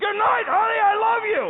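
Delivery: very high, shrill, bellowing full-volume scream. Retelling saying good night through a pressurized mask: imitating own screaming. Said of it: "I'm now screaming".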